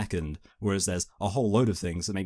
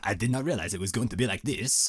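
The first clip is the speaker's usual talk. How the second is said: put-on French-sounding accent; 2 semitones higher than usual. Imitating a witness giving courtroom testimony in a French-sounding accent. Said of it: "it sounds French".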